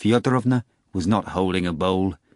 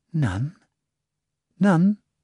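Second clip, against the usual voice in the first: gentle, soothing, pitched-up, calming tone; 8 semitones higher than usual. The nurse Praskovya Fyodorovna gently shakes the moaning Nikanor Ivanovich, soothing mutter. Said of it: "He muttered soothingly".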